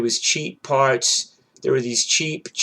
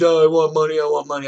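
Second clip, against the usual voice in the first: mock shouting, pushy and insistent; 3 semitones higher, 4 dB louder than usual. Retelling a repair guy demanding money: imitating someone screaming. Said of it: "screaming at me".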